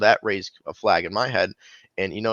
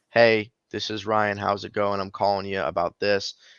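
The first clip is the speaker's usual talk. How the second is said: put-on flat, level monotone delivery. Describing how other agents open their calls, mimicking a monotone call intro. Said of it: "and it's it's so monotone".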